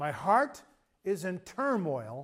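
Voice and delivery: drawn-out, word-by-word reading.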